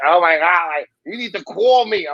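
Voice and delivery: put-on thick New York accent. Quoting her mom from new york, imitating her thick new york accent. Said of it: "she has a very thick New York accent".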